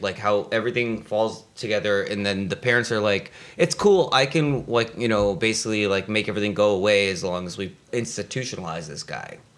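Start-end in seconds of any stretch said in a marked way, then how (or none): none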